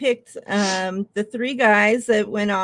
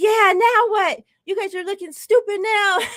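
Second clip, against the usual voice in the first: very high, loud, jeering, taunting yell; 11 semitones higher, 4 dB louder than usual. Retelling watching the second sack: retelling his own louder yelling. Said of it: "that much louder".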